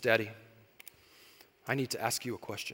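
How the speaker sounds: very serious, grave, dead-earnest low tone. Father retelling what his daughter asked while snuggled up, imitating daughter's very serious tone. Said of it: "in a very serious tone".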